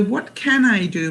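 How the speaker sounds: plain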